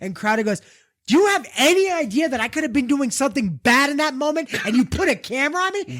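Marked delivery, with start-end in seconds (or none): 1.1-6.0 put-on, high, angry scolding telling-off. Retelling how a host scolded a guest for filming him: imitating someone screaming and scolding. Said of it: "He screams at scolds him".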